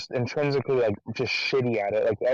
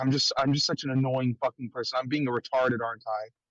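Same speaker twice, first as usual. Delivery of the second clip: put-on borderline crying, falling apart, near tears. Retelling a buddy's paranoid outburst after smoking: imitating someone near tears. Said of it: "borderline crying and saying".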